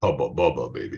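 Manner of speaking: dropped, low, soft, deep voice. Speaker demonstrates vocal pitch for the audience to follow, using a low tone of voice. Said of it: "we can do our low tone of voice".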